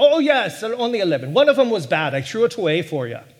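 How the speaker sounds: bad, butchered, put-on Irish accent. Telling a joke and voicing the reply, in a butchered irish accent. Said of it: "you have to hear it in the Irish accent".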